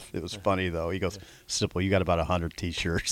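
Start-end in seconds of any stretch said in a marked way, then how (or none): 1.5-3.1 low muttered mumble under the breath, half to oneself. Retelling what Bill said, imitating Bill mumbling under his breath. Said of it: "he just mumbled it under his breath".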